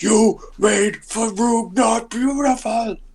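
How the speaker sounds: very high, brutish, snarling half-orc voice. Voicing an angry half-orc in the game: snarling brutish half-orc voice. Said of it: "just snarling, like, just, like, the brutish sort of, like, like, half orcs".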